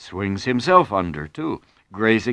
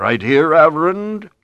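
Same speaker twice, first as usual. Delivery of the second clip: big, loud, booming voice; 6 semitones higher, 6 dB louder than usual. A voice calls out to the Reverend from between two cows: booming voice. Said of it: "a voice booms".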